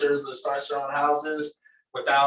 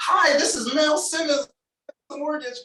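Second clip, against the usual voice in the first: very high, fake, salesy put-on voice; 13 semitones higher than usual. Demonstrating the fake sales voice once used on phone calls with clients. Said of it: "that little fake sales voice that we all have".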